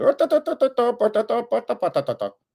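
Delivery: imitated Indian accent, hard to understand. Retelling a reporter asking a question: imitating an Indian reporter's accent. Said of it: "And he goes".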